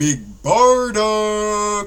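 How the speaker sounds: heavy emphasis on both words Big Barda. Showing how they always say the character's name: heavy emphasis on Big Barda. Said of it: "It's always emphasized as Big Barda".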